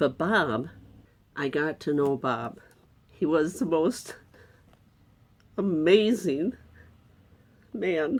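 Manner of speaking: crying while talking, tearful voice. Remembering getting to know bob, an amazing man: crying while talking. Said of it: "I can't do this without crying".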